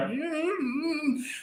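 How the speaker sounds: very high, drawn-out, sarcastic mm-hmm.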